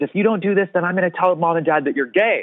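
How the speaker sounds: heated mild yell. Retelling a sister's threat in a high school argument: imitating someone yelling. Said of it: "she yelled at the top of her lungs".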